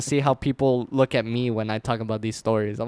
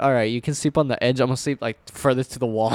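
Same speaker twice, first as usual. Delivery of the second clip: usual speaking voice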